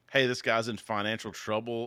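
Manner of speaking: ordinary delivery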